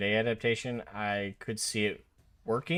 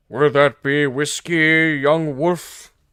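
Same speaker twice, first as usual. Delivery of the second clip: very loud, towering, booming, raised voice; 5 semitones higher, 15 dB louder than usual. Voicing the barman Russ answering a customer's order, in a booming Russ voice. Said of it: "he says with a booming voice".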